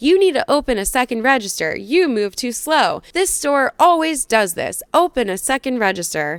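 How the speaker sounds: put-on aggressive, pushy, insistent, demanding tone. Retelling a frustrated customer's loud demands in a long line: imitating aggressive loud complaining. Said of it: "getting aggressively loud, not quite yelling".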